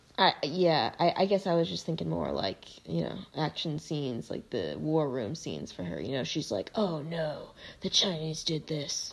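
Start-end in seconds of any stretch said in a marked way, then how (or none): 6.7-9.1 raspy put-on regal voice sinking to a whisper. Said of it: "Is that your Queen Victoria impression?".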